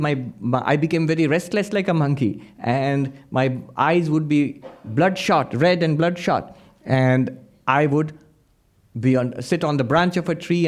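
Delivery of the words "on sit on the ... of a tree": ordinary talk, nothing marked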